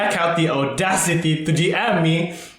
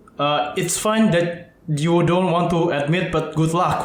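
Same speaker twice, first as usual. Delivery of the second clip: ordinary talk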